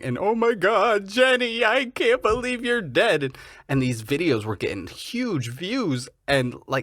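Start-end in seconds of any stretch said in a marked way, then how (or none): 0.2-3.2 put-on tearful sobbing, very high-pitched. Retelling a YouTuber's fake grief video at an accident site: imitating someone crying. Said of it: "and he's crying".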